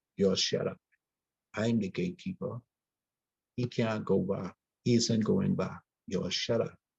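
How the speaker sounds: ordinary talk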